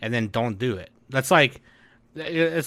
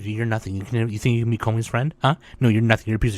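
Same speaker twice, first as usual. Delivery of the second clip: put-on, mock-menacing whisper; 3 semitones lower than usual. Acting out what a girl from a show says to others, imitating a menacing whisper. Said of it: "she menacingly whispers in everyone else's".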